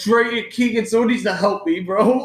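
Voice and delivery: tearful, high, crying pleading voice. Retelling crawling from the basement in pain, calling for help: imitating own crying plea. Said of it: "crying 'cause this pain".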